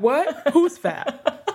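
high-pitched, laughing, mock defensive tone. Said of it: "I'd be like".

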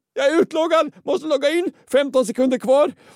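high, loud, panicked outburst.

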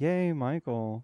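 deadpan, flat, unenthused tone with no excitement. Teasing another speaker about how he said a cheer: imitating an unenthused tone. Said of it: "That sounded very, like".

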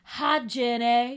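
put-on Southern accent. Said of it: "the Southern accent".

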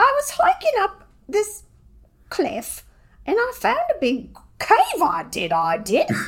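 put-on British accent, very high, sing-song, swooping. Asked to summarize The Cave of Time, speaking in character in a British accent. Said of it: "I'll do the accent".

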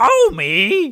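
very high-pitched, loud cartoon voice. On a podcast, the speaker announces they'll do Marge, then does Marge voice. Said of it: "And I'll do Marge".

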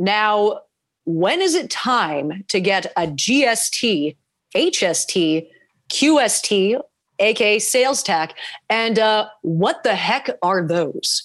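serious, grave news anchor delivery. Starting on cue after the reporter voice is approved: serious broadcaster voice. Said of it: "I'll do it in like a very serious broadcasting voice".

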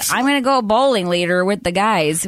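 bad put-on American Ohio accent. Describing a character's accent to another speaker, quoting him in a fake Ohio accent. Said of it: "he has to sound like he's from like Ohio".

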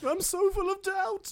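very high put-on voice, each word stretched long. Joking about a film's cast with another speaker: Meryl Streep impression. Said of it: "My Meryl Streep impression".

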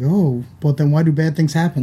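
ordinary delivery

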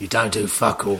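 put-on London gangster voice. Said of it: "in the voice of Ray Winston".

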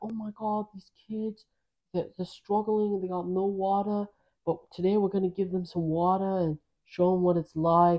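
put-on Australian accent. Describing a man who brings water to kids, doing an Australian accent impression. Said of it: "he's like Australian, or he has an accent".

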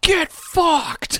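put-on very high, drunken-sounding yell. Telling about a drunk neighbor, speaker imitates him yelling drunkenly. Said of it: "your neighbor was just drunk as shit and we just hear".

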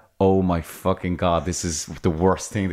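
plain

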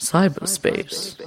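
slow, drawn-out documentary narrator voice. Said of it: "in my Adam Curtis voice would say".

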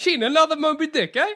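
put-on Italian accent, way off. Joking about jean who makes the sandwiches, calling out in a bad italian accent. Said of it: "That was not an Italian accent".

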